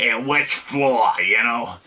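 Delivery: rough-voiced, gruff cab driver voice. Describing a cigar-smoking cab driver character, the speaker does his rough voice. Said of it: "really rough voice".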